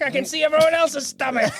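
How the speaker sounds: high put-on character voice. Answering what the character's voice sounds like: Krang voice. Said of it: "Krang, what's your voice sound like?".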